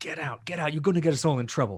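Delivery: high, furious, angry hiss. A game master voicing a woman who confronts the players, hissing. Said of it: "kind of just hisses at you".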